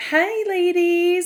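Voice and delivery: high put-on woman's voice. Retelling a bar bit, imitating Jax in his woman persona. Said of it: "he'll do a voice, a persona, a tone".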